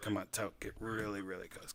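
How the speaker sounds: very quiet, close half-whisper, barely any sound. Trying again, the speaker leans in close to someone and half-whispers. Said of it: "let's see if I can like whisper".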